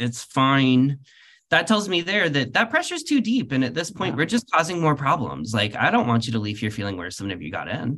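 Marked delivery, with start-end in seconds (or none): 0.0-1.0 mock speaking through gritted, clenched teeth. The speaker acts out someone in pain asked about pressure, imitating speaking through gritted teeth. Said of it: "you're speaking through gritted teeth".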